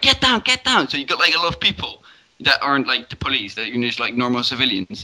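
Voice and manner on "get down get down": shout pitched way up, very high. Describing a game character's command when a key is pressed, imitating someone shouting. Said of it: "he shouts like".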